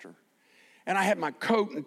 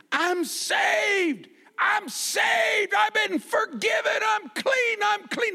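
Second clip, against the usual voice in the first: mock very high, slow, drawn-out screaming; 3 dB louder than usual. Retelling how a man started screaming after being brought up: imitating a man screaming. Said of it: "he starts screaming".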